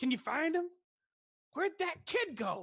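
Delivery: very high, very loud, shrill, frustrated yell. A game narrator voices someone heard below the thatch roof, angry, frustrated voice. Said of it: "An angry, frustrated voice go".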